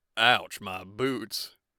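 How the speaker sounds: put-on Texan accent. Put on the spot, the speaker jokes in a Texan accent. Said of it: "Laughs in Texan".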